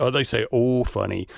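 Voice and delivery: ordinary talk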